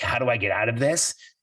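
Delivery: normal talking voice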